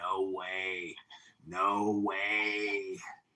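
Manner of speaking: very slow, nasal Chicago twang, words way stretched. Imitating a seventy-one-year-old woman they describe, in a nasally chicago accent. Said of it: "she's got a very nasally Chicago accent".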